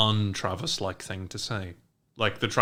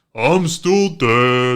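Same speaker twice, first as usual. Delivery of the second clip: booming delivery with the word "dead" stretched out; 2 semitones higher, 11 dB louder than usual. Doing a callback line for a character who died: Coach Martinez voice. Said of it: "we still regularly do Coach Martinez voice".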